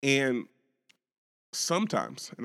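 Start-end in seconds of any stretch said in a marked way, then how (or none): 1.5-2.3 some in sometimes stressed, a bit higher. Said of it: "I stress the word some".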